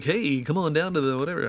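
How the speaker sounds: hyped announcer voice. Showing the kind of voices they like doing: announcer guy voice. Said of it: "or an announcer guy for a thing".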